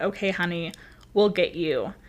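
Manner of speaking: plain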